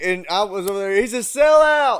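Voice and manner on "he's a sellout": mock jeering, heckling high yell. Retelling taunting a newly sponsored friend: imitating own past yelling. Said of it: "yelling at that shit".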